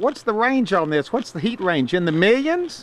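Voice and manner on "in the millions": ironic, sarcastic, not meant straight. Asking about the ghost pepper's heat range, sarcastic. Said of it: "I was being sarcastic".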